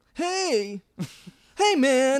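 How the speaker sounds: whining, very high-pitched and loud. Describing a film character to another speaker: whiny Hudson impression. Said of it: "he's just the whiniest, bitchiest, tough guy".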